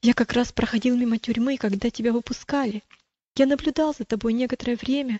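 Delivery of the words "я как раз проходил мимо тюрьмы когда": ordinary delivery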